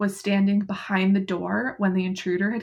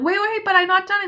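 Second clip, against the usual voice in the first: mock high-pitched calling yell; 11 semitones higher, 5 dB louder than usual. Retelling a story where one character calls after another who is leaving, retelling a yell. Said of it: "she's yelling".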